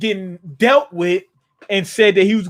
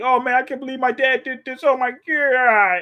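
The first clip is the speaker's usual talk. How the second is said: high, weepy sobbing voice with "God" drawn out; 5 semitones higher than usual. Reacting to a scene and imitating Yamato crying. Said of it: "Look at Yamato crying like".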